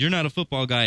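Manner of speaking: ordinary delivery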